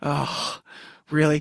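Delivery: mock weary, deflated tone. Retelling how a friend reacted when asked the question: imitating a dejected reply.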